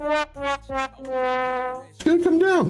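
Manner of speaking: voice shooting very high, slow and drawn out. Explaining why not to enter a trade: voice going up high. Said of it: "I don't know why my voice went up so high".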